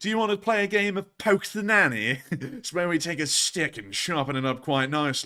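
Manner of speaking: put-on high-pitched, upper-class English schoolboy accent. Retelling what a child asked, the speaker quotes him in a posh British accent. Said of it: "But that accent is something".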